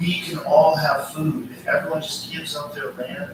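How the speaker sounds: ordinary delivery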